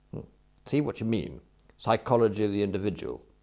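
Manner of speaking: plain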